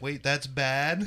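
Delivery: mock guileless, puzzled, innocent tone. Retelling a friend's question after saying a bad word: imitating an innocent tone. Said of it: "so innocently".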